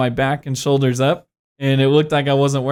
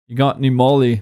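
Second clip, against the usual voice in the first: put-on British accent. Retelling what a stranger in a crowd asked: British accent. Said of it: "in this British accent".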